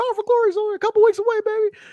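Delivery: very high-pitched, hyped-up, excited selling voice. Recapping a wrestling show's hype for the next event: Jimmy Hart voice. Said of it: "I really like the Jimmy Hart voice".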